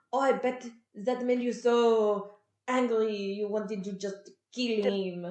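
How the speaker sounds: clumsy, terrible fake French accent, very drawn out. Retelling a scene where Gus speaks: imitating Gus's terrible French accent. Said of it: "Gus is trying to do this terrible French accent".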